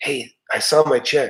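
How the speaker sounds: soft, hushed, half-whispered stage whisper. Retelling an employee's words about her paycheck: imitating someone half-whispering. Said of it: "she was kinda whispering".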